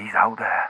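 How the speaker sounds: voice kept low and quiet. Calling in to a radio show: keeping voice down. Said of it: "I've gotta keep my voice down".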